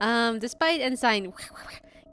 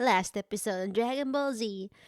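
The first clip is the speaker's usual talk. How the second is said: anime recap announcer voice. Joking about a recap at the start of each stream: Dragon Ball Z recap announcer voice. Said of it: "the Pokemon announcer guy shows up to give out a recap".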